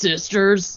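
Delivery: put-on growling wrestler voice. Saying a word the way another speaker asked: Hulk Hogan voice. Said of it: "Start saying sisters like that".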